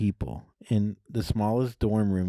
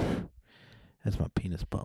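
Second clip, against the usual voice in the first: breathy near-whisper, barely voiced; 3 semitones lower, 5 dB quieter than usual. Retelling own stoned reply to a roommate, imitating Clint Eastwood. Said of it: "I said it like Clint Eastwood".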